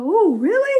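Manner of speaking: high, loud, mock breezy, dismissive tone. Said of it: "I go".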